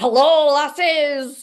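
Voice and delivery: hearty, loud, high Scottish brogue. Imagining a guy joining the group and greeting them: Scottish brogue. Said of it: "a Scottish brogue who's like".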